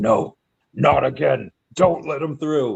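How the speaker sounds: put-on, furious, slow, rasping supervillain voice, drawn out. Retelling a comic scene with an alarmed fortress: imitating an angry Darkseid. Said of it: "Darkseid is, like, is super pissed off".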